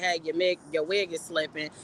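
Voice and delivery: ordinary talk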